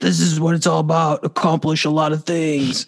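unkind, roaring monster voice. Speaker voicing the unkind inner voice that roars on some days: monster voice. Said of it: "That's your monster voice".

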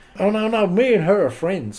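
put-on American accent. Retelling a confrontation, quoting the man's reply, American accent. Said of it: "American accent".

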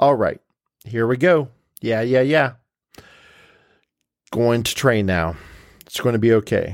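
fast, flat, plain, unexcited businesslike voice. Voicing the middle inner voice, dull as a wet rag: matter-of-fact voice. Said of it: "he says in a matter-of-fact voice".

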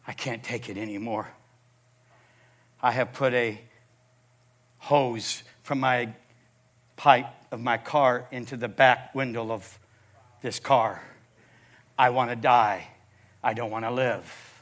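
mock tearful, crackling voice. A pastor retells his phone call, imitating the man's tearful, crackling voice. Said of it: "Now I hear tears, voice crackling".

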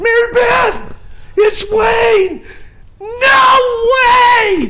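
very high, very slow, drawn-out shrieking scream. Retelling how a man on the phone reacted to a name, retelling someone screaming. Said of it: "He's screaming".

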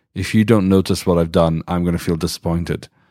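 ordinary talk

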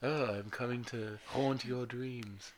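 soft, hushed, eerie, spooky storyteller voice. Trying out talking softer for bedtime stories, soft creepy voice. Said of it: "But I just sound creepy".

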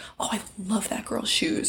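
soft, hushed whisper. Retelling what she says to Jesse about strangers: imitating a whisper. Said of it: "whisper to him".

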